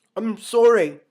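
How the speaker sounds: very loud, thick, high voice. Reading a novel aloud, a character apologizes for having left, in a thick voice. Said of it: "he said in a thick voice".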